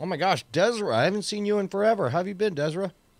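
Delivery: high, mushy speech around a mouthful of gum. Greeting Desra, unseen in forever, while talking with your mouth full. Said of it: "I speak with my mouth full".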